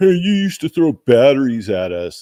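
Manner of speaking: acted, hostile, high, loud angry yell. Recounting a guy who yelled at the speaker, retelling a guy's yell. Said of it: "some guy was yelling at me like".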